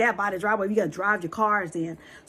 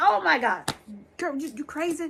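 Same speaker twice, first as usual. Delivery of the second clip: put-on frantic scream, high and panicked; 6 semitones higher than usual. Retelling screaming at herself in the car at a dead end. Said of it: "literally screaming at myself in the car".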